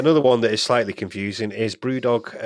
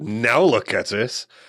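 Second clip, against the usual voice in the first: mock, put-on gloating voice. Acting out a boss's tweet, sarcastically: imitating James gloating. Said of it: "he didn't gloat too much".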